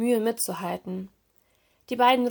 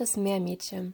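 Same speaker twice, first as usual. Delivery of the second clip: usual speaking voice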